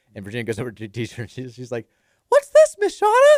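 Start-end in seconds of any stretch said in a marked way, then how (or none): 2.3-3.4 put-on voice going way up high and loud. Retelling a child at school asking the teacher: imitating a Minnie voice. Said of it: "in her Minnie voice".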